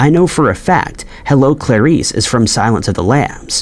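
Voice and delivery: normal talking voice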